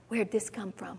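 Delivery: soft, hushed wondering to oneself.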